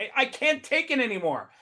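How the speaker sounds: high-pitched, tearful crying through every word. Joking about a platform user calling up in tears: imitating John crying. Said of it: "crying, crying that he's got so many interviews".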